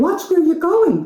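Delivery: tiny, very high, squeaky little creature voice. Narrator reading a story, a spider speaks to Lawrence: small voice. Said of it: "a small voice said".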